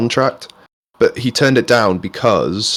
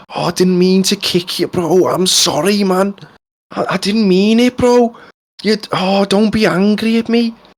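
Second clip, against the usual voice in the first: very high put-on Liverpool Scouse accent; 10 semitones higher than usual. Retelling a TikTok of a Scouser apologising to a frog, imitating a Scouse accent. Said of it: "some Scouser".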